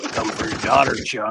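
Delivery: put-on ghoul character voice. Doing a movie quote after Beetlejuice is named three times: Beetlejuice voice. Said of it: "you're Beetlejuice".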